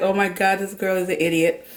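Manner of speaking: plain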